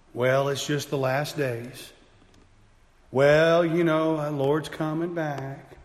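sad, small, measly, mopey little voice. A speaker addressing Christians mimics complacent believers in a little measly Eeyore voice. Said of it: "with that little Eeyore measly voice".

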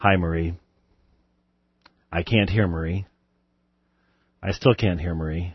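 low, soft, calm, composed professional host voice. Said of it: "handle this in a professional fashion".

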